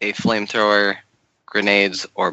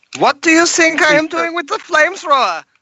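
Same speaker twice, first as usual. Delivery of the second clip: put-on frantic, hysterical, shrill, very high-pitched German accent; 6 dB louder than usual. During a role-play game, a character reacts to a beast in a hysterical German voice. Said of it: "I really like the hysterical German voice".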